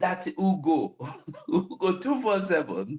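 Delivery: giggling. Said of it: "I began laughing".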